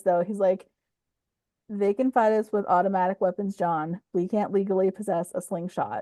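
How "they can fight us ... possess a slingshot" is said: plain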